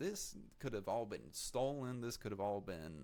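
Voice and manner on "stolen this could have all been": ordinary talk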